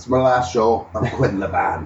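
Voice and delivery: put-on heavy, thick Glaswegian accent, laid on. Quoting a band member's sudden announcement, in a thick Glaswegian accent. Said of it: "In his thick Glaswegian accent".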